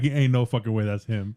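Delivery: ordinary delivery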